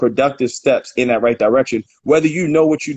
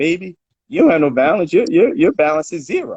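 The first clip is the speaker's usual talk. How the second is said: put-on down-home country Southern US accent; 4 semitones higher than usual. Quoting a woman telling him his balance is zero, country southern accent. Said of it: "in her country southern voice".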